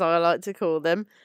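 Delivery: ordinary delivery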